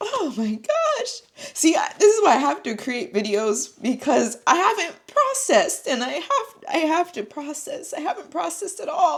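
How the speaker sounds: crying, tearful, high, wavering voice. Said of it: "I didn't really cry till now".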